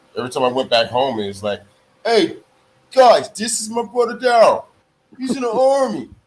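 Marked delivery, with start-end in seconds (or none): 2.1-6.0 put-on Italian-American accent. Retelling how a brother introduced him at home: imitating Italian-American accent. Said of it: "you would have thought my brother was fucking Italian".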